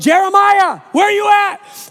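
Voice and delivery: loud, drawn-out calling yell. Retelling searching around the house for their missing son, re-enacting yelling for him. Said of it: "I'm yelling".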